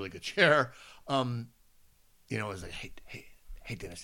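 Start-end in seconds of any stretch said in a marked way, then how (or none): 2.7-4.0 hushed whisper under the breath. Retelling a greeting in an office where everyone's working: imitating a whisper. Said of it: "It was a whisper".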